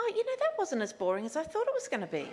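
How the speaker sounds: mock surprise, high and swooping. Retelling someone's comment on last week's reading: imitating a surprised tone. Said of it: "in quite a surprised tone".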